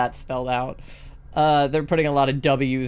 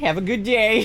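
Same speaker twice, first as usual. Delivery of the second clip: heavier, pitched-up put-on Canadian accent; 8 semitones higher than usual. Retelling how people answered a phrase: imitating a Canadian accent. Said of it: "people would slip more Canadian".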